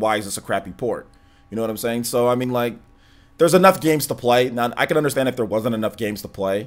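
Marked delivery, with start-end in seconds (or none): none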